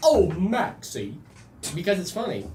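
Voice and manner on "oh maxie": silly put-on animated cartoon dog voice. Chatting about thanking the Fortnite bus driver, the speaker drops into a Goofy impression. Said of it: "It's my Goofy impression".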